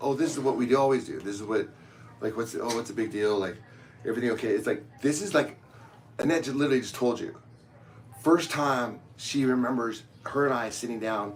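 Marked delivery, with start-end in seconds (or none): none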